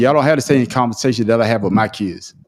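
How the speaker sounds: ordinary talk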